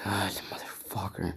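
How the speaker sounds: put-on angry tone. Acting out how he swore after losing by a point, mock-angry cursing. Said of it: "he's all pissed".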